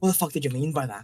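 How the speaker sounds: aggressive, hostile, confrontational tone. Voicing a character who draws an axe and steps forward: aggressive threat. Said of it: "kinda steps forward aggressively and goes".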